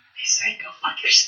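whispered aside, under the breath.

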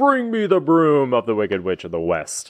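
grand proclaiming with widely swinging pitch. Describing the film's giant head on the screen, big booming Wizard of Oz voice. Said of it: "talking in that big booming voice".

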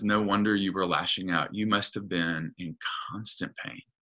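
gentle voice. Retelling a scene from a show, a nun comforting an old woman: tender voice. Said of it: "her voice just becomes so tender".

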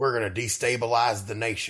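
fake southern affectation. Quoting a character the others are discussing: southern affectation. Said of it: "southern affectation in the voice".

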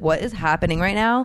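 ordinary talk

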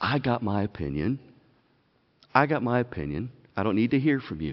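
put-on calm, soft dismissiveness. Speaker acting out a person who dismisses another's opinion, mock nice, calm and soft. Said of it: "nice and calm and soft".

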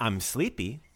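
ordinary talk, nothing marked

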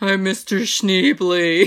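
put-on creepy murderer voice. Recounting how he did Ned's voice in a scene, imitating Ned's murderer-like voice. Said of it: "He reminded me of Bill from Silence of the Lambs, the murderer".

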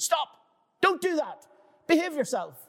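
very high, sudden, scolding shout. Retelling how a friend suddenly started shouting over the phone: imitating a friend shouting. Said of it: "he started shouting at me on the phone".

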